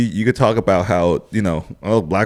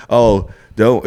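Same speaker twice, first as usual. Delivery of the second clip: usual speaking voice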